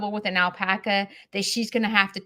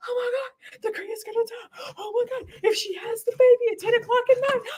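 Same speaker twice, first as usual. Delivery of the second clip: acted-out frantic wail, very high, crying panic; 14 semitones higher than usual. Retelling her reaction to hearing the cria could die: imitating her own panic. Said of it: "I am in outer space going".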